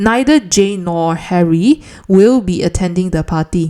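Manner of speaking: plain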